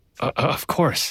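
sheepish. The narrator answers a girl's remark about her parents, sheepishly. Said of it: "I say sheepishly".

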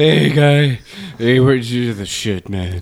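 slow, heavy-breathing, laid-back hey-man party dude voice. Imitating a friend at a party in a heavy-breathing party guy voice. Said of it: "Oscar's the heavy breathing guy at the party".

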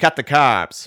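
put-on thick Boston accent, shouted very loud. Retelling a bagel commercial seen while waiting: imitating a thick Boston accent yell. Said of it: "this dude with this thick Boston accent going".

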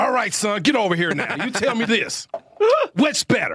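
Southern drill sergeant voice. During a Scrabble game, asked if he's a drill sergeant, answering in a Southern drill sergeant voice. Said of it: "Are you like a drill sergeant?".

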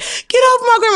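play-acted, very high-pitched scream. Retelling a fight where she was a child: imitating her own screaming. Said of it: "I'm screaming".

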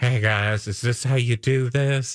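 cringy, awkward seductive tone, slow. Retelling a celebrity's cringy thirst trap attempt, imitating an awkward come-on. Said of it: "thirst trap attempt where he's like".

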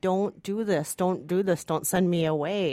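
mock begging in a child's voice. Describing a film scene, the speaker acts out the child begging the parent, retelling a child's begging. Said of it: "your child is begging you".

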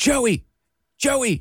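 mock, high, urgent calling out. Speaker retells calling out to his twin brother for help, retelling a yell. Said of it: "I'm yelling in for my twin brother".

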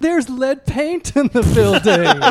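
complaining voice. Speaking at a real estate convention, doing an impression of rent-stabilized tenants. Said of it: "Here's my impression of the rent-stabilized tenants".

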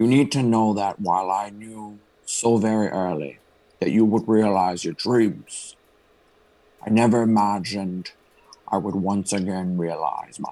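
put-on Scottish-accented voice. Reading a letter from a movie aloud: Sean Connery voice. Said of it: "he's gonna do it in the voice of Sean Connery".

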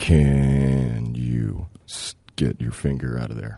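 low, quiet sexy voice. In a game of saying things in a sexy voice, taking a turn: sexy voice. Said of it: "Things said in a sexy voice".

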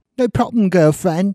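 put-on English accent. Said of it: "you can stop with the accent".

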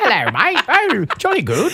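put-on English accent. Imitating a woman who drinks and slips into a put-on english accent. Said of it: "No, it's English".

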